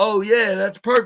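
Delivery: mock, dry, sarcastic, mocking agreement. Retelling an NXT segment, quoting Ava: imitating Ava being sarcastic. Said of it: "This is where she was sarcastic".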